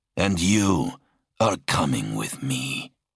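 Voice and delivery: growled, menacing, threatening tone. Narrator reads the dark warrior addressing his captive, growling. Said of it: "the dark warrior growled".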